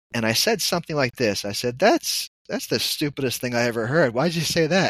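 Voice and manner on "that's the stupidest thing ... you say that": indignant, offended put-on voice. Recalling what the speaker once said back to her: retelling an indignant retort. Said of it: "As if she insulted me or something".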